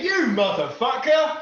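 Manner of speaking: loud, high-pitched, enraged, roaring furious yell. Voicing an enemy who finds a foe under the table: angry shout. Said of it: "he's gonna survey the scene angrily".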